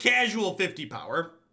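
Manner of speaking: bragging tone, stress and rise on casual. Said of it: "emphasis on the casual".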